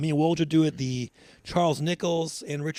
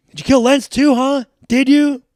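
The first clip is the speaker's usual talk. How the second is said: shrill, furious, very high and very loud; 9 semitones higher, 13 dB louder than usual. Retelling a scene where a man shoves Charles Nichols's hand away, acting out pissed-off accusation. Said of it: "he shoves it away like pissed off".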